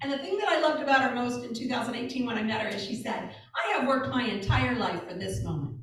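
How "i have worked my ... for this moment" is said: ordinary delivery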